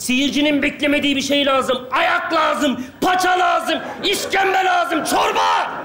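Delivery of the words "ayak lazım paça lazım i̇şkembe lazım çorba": full-on high, swooping shout. Scolding someone for writing a predictable script, demanding a twist: shouting. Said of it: "Niye bağırıyorsun oğlum?".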